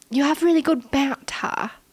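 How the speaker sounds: British London accent. Reading out a viewer's comment in a London accent. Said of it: "I imagined them with a London accent".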